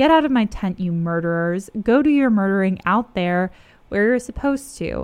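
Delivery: plain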